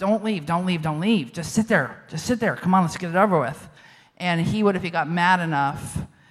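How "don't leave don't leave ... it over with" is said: put-on quiet muttering under breath. Retelling silently urging a parent not to leave during a fight: imitating muttering under breath. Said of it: "under my breath".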